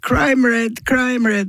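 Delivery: high, mock-screamed, taunting child voices.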